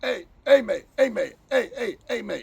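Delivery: loud, high shouts, repeated over and over. Speaker retelling a stranger calling out to them, imitating a man shouting. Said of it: "he's shouting at me".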